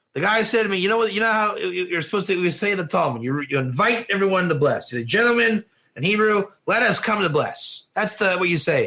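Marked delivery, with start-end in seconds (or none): none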